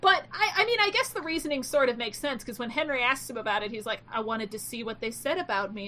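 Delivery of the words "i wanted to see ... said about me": put-on, really creepy delivery. Retelling what a character answered when Henry asked: imitating a really creepy delivery. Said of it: "in a really creepy-ass way".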